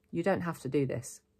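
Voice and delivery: ordinary talk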